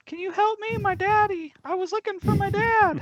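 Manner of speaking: very high, loud put-on voice. A player in a game asks a stranger for help, in a higher-pitched voice. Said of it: "talk in a higher pitched voice".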